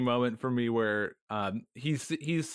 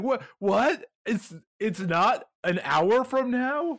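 mock baffled disbelief, surprised, high and drawn out; 9 semitones higher, 3 dB louder than usual. Retelling a confused character's line: imitating a surprised Sheridan. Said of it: "he was just so surprised".

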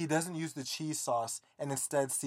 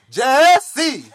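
play-acted shrill, booming scolding, very high and loud; 11 semitones higher, 20 dB louder than usual. Retelling how their mom calls their name when they're in trouble, imitating mom scolding. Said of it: "that's how I know that I'm in trouble".

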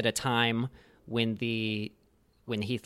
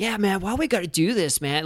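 upbeat, energetic voice, pitched up high, loud and lively; 8 semitones higher, 5 dB louder than usual. Describing the voiceover for Firestorm in a game, imitating upbeat energetic Firestorm voice. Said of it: "this kind of really upbeat, energetic take on the character".

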